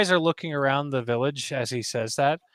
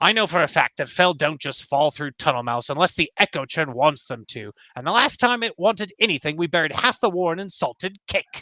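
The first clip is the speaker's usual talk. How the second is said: put-on complaining, grumbling old elder voice. Voicing a village elder warning about the echo: grumbling old elder. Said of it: "She, like, grumbles about it".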